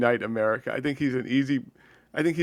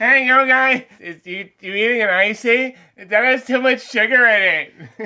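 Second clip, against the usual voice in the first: mocking annoying politician voice, higher and louder; 10 semitones higher, 7 dB louder than usual. Joining the joke about a politician's voice: imitating Ron DeSantis. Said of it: "He's like".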